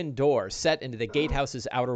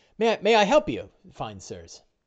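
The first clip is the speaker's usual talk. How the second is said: put-on old servant voice, much higher, slower; 4 semitones higher than usual. Narrating a door being opened, Corwin greets the visitors in an elderly manservant voice. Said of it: "He opens it and goes".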